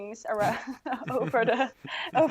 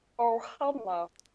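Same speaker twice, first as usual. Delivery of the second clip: put-on alien voice. Doing a requested impression of the blue alien: Stitch voice. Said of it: "if you do a convincing Stitch impression".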